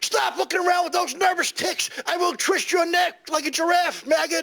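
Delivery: shrill, high-pitched screaming rant. Retelling what a guy said to him on arrival: imitating someone screaming. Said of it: "he's screaming at me like".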